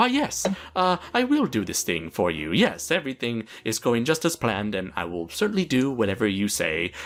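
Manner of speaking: put-on calm, almost friendly, obliging sing-song tone. Acting out a man following his superiors' orders: mock-calm, almost friendly. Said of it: "he acted very calm and almost friendly".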